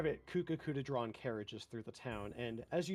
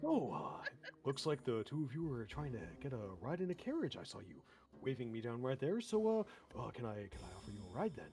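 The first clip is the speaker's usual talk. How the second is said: put-on kindly old man voice; 2 semitones lower than usual. Voicing a kindly old carriage driver greeting the players: kind older gentleman voice. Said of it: "He's a very nice kind of older human gentleman".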